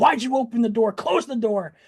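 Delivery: put-on, adrenaline-fueled, angry, high shouting. Recounting chasing the dog, the speaker repeats what they yelled at their son: retelling own angry yelling. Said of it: "And I was yelling".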